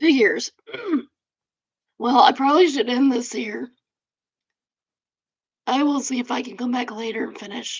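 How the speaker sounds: losing voice, hoarse. Ending early after coughing fits, losing voice. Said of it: "Now I'm losing my voice".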